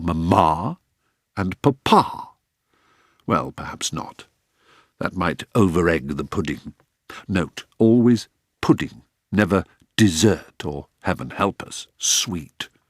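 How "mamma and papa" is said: "Mamma" and "Papa" stressed on final syllables. Suggesting Mamma and Papa rather than Mum and Dad, final-syllable stress on Mamma, Papa. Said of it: "with the emphasis on the final syllable".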